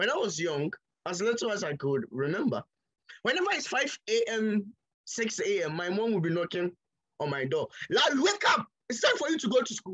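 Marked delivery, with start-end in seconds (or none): 8.2-9.9 mock high-pitched shouting voice. Speaker recalls mom knocking at dawn for school, imitating mom shouting. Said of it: "she'll be shouting and screaming".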